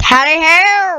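loud, high, bad put-on English gentleman accent. Announcing he will continue on, then a bad English gentleman impression. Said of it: "I sounded like an English gentleman there".

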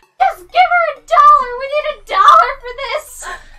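imitated, acted-out screaming. Retelling a garage sale quarrel, imitating the mom screaming. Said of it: "the mom is then screaming".

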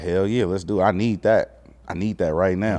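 plain

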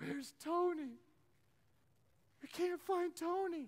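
high, slow, tearful crying wail. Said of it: "they were crying".

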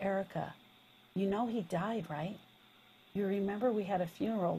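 voice dropped low and hushed. Retelling what was said on a phone call: lowered voice. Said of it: "I lowered my voice and I leaned into the phone".

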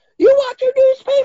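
shrill scream, very high and very loud. Retelling a man screaming at someone with a rolled-up newspaper, retelling a super-high scream. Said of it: "starts just screaming at him".

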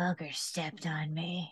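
very quiet, close, muttered murmur. A small character who was stepped on answers whether he's okay, very quiet in your ear. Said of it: "You just hear very quietly in your ear".

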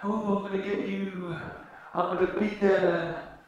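haunting, spooky ghostly voice. Trying out a voice after saying a ghost is in mind: ghost voice. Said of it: "I've got a ghost in mind".

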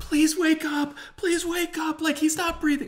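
very high, sobbing, frantic and desperate. Recalling someone pleading over a man not breathing, retelling a screaming, crying plea. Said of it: "Someone is just screaming, crying".

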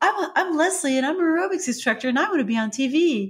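very high-pitched voice, way up top. Showing how Leslie, an aerobics instructor from 1980s TV, talks, use her really high voice. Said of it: "has a really high voice".

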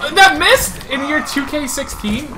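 high, loud, excited shout.

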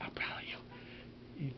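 slow, soft whisper.

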